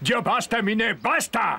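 shouting. Ali confronts Eminé in a drama scene, shouting. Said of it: "No me grites, Ali".

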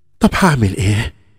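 usual speaking voice

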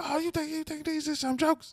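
very high-pitched, comic, mocking, taunting tone. Retelling a heckler roasting the comic from the crowd: young Chris Rock impression. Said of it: "he was doing, like, a young Chris Rock impression".

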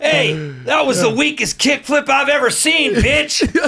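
high yelling. Acting out a coach mocking a weak kickflip: imitating Coach Frank yelling. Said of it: "just yelling at kids".

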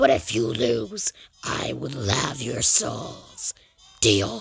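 voice dropped very low in pitch. Reading a Cuphead story aloud, voicing the Devil's offer, in the Devil voice. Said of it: "that's my devil impression".

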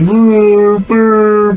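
high, loud, pumped-up battle cry. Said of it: "be like".

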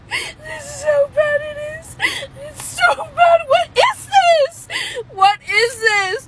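tearful, high, drawn-out sobbing. Complaining about the worst haircut of their life, crying. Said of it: "here I am crying because I got the worst fucking haircut".

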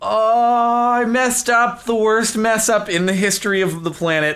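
freaking out, high and loud.

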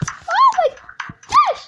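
delighted shriek, very high and loud. Playing a game on stream, shouting with joy. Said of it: "Pardon d'avoir crié là, parce que je suis très content".

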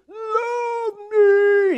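very high, loud, clownish pleading voice. Retelling a movie scene of begging a departing girlfriend: Jim Carrey impression. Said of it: "He's doing the Jim Carrey thing".

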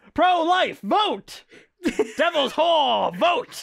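imitated yelling. Speaker mocks how a man on steroids kept shouting two words, mock yelling. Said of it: "just like yelling like two words and then saying vote".

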